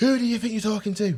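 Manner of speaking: loud, very high, acted-out shout. Speaker re-enacting how he shouted at a young person messing about, retelling a shout. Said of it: "I shouted at him".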